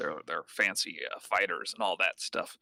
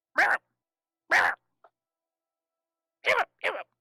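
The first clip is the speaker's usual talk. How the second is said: very high, loud, shrill squawking creature cry; 6 dB louder than usual. Voicing little bird folk walking down a hallway: squawking bird-creature voice. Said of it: "chirp back and forth to each other in these weird, like, squawking".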